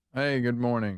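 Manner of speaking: dull, unbright, flat tone. Welcoming a coworker to work in the morning: dull, unbright greeting. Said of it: "that's about how bright you are".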